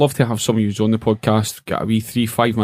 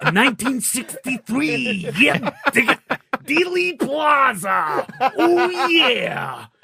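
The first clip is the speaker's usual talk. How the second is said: put-on gravelly wrestler voice, pitched higher. Joking about hosting a quiz in a Macho Man Randy Savage voice. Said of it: "in the voice of Macho Man Randy Savage".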